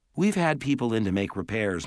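ordinary delivery

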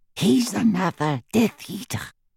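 breathed, high murmur. Griphook speaks to Harry as a stranger stops before them, breathed. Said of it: "breathed Griphook".

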